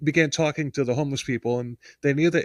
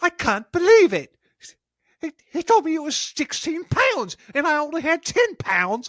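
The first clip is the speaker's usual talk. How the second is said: very high, squeaky, complaining voice; 14 semitones higher than usual. Retelling a woman complaining about candy, imitating her in higher pitch. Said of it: "like higher pitch".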